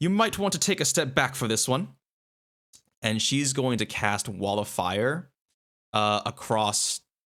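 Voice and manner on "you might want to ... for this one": quick, high, called-out put-on British accent. A character zooming into the air yells to no one, British accent. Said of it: "going to have a British accent".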